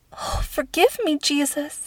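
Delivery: hushed whisper. Reading a story, voicing a character alone in a tiny tower room: whispered. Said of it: "she whispered".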